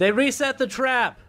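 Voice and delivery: high, loud yell. In character after falling from a bridge, calling up to the party: yelling up to the party. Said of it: "I'm gonna yell up to you guys".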